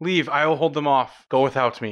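shouting. Voicing a character who tells his siblings to flee: character yelling a warning. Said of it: "he yells out".

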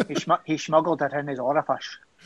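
put-on Scottish accent. Repeating a line about a smuggled watch, as asked: Sean Connery accent. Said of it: "do that in a Sean Connery accent".

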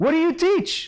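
high-pitched shouting.

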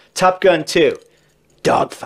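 theatrical delivery fading to whisper. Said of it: "whips off his aviators like, uh, David Caruso on C S I".

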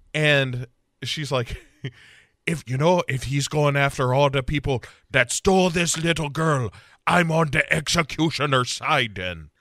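put-on Irish accent drifting into Jamaican. Voicing a woman in a story, irish accent going half jamaican. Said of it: "going half Jamaican with this Irish accent".

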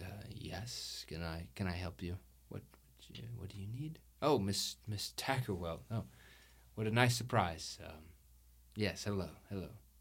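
hesitant, put-on dark elf character voice. Voicing Sylvia, a dark elf, opening the door: Sylvia the dark elf voice. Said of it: "you see Sylvia, who is a dark elf. she opens and she goes".

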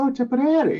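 big, high, loud Irish brogue.

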